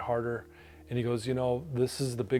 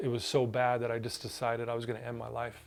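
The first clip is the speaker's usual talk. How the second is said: normal talking voice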